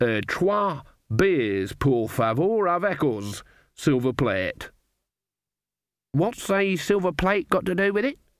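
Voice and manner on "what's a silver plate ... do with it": high, insistent, pointed, demanding tone. Granny questions Nanny's foreign words at the bar, demanding. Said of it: "Demanded Granny".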